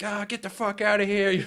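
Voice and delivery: high, furious, angry yelling shout. Retelling a man by a campfire yelling at you, retelling a yell. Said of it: "he started like yelling at me".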